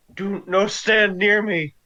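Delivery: put-on loud, high battle shout. Warning the group in character during a fight: in-character shout. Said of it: "is going to shout".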